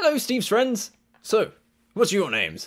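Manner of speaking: loud, very high, swooping gnome character voice. Voicing a newly arrived gnome in platform shoes, tall gnome character voice. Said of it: "And then he comes out and he's followed by this gnome that's sort of 5'8", 9", in his platform shoes".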